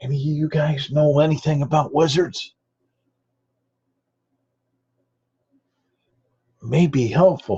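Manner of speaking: whispering in a character voice. Playing a character who asks his companions about wizards: whispering in character. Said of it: "And he'll whisper back".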